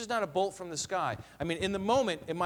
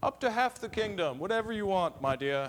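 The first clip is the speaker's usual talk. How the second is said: sudden slip into a put-on British accent. Commenting on a king's grand promise, the speaker voices him: slipping into a british accent. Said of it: "I slipped into a British accent there".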